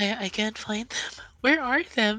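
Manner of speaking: very high feminine voice. In a told scene, a voice heard searching for something: feminine voice. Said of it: "you hear the same feminine voice again".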